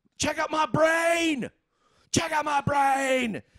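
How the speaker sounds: very high, dragged-out, drawn-out screaming. Retelling a bachelor party story, imitating Mike screaming. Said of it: "he's like screaming".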